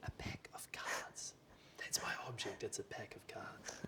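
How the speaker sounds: slow, hushed, barely-there whisper. Revealing a secret object to the audience during a bluffing game: saying it really quietly. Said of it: "I gotta say it really quietly".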